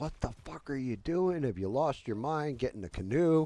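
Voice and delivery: mock frantic screaming, high and freaked-out. Retelling a canoe trip as a wife screamed from the boat: imitating wife screaming. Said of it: "top of her lungs".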